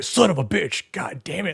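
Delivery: high-pitched, explosive outburst. Retelling Stone Cold Steve Austin's first cold plunge, imitating him cursing. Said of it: "he's just cursing all the time".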